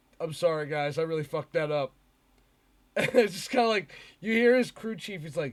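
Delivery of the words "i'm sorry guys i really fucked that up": mock-dejected, sad put-on voice. Recounting what a driver said on his in-car radio: retelling a dejected apology. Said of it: "he's super sad".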